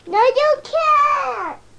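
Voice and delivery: high, loud hollering, can't dragged out. Objecting when someone says they will go help Mark, yelling. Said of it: "You're yelling".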